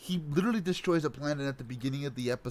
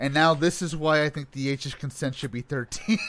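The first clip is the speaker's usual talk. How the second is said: normal talking voice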